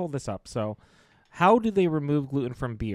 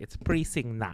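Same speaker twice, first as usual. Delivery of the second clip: put-on Filipino-accented phrasing; 3 dB quieter than usual. Quoting how their mom would say it, in a put-on filipino accent. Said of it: "That's my Filipino accent".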